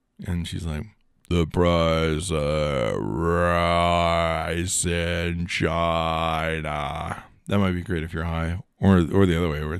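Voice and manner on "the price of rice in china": very slow, drawn-out, slowed-down robotic assistant voice. Describing speed settings, the speaker imitates Alexa's answer talking really slow. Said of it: "talk really slow to you".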